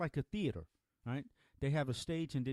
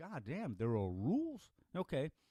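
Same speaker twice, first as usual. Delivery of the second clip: ordinary delivery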